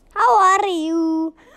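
put-on Italian accent, rolled r in are. Imitating how the English teacher speaks English: imitating Silvia's Italian-accented English. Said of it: "She speaks like this".

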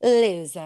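low, muttered, tossed-off, dismissive aside. Retelling what a woman said by the elevator: imitating a muttered insult. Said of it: "She said it almost under her breath".

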